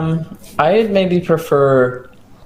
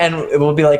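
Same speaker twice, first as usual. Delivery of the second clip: ordinary delivery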